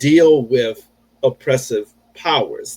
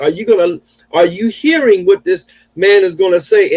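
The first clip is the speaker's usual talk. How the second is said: put-on, loud yelling; 7 semitones higher, 4 dB louder than usual. Retelling a tense confrontation with police, acting out how the man shouted at the officers. Imitating someone yelling. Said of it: "And then he yelled".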